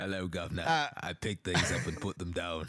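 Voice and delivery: put-on British accent. Repeating a line after another speaker mentions a british accent: british accent. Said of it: "I'm just hearing that in a British accent".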